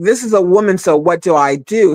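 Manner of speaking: plain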